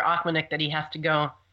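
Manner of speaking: ordinary delivery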